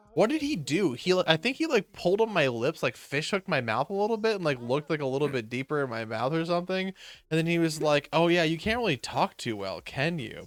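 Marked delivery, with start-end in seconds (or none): 8.1-10.4 play-acted sultry, suggestive, knowing tone. Retelling what the dentist said during a checkup, imitating a sultry tone. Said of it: "the way he said it was so, like, sultry".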